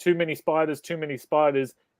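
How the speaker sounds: plain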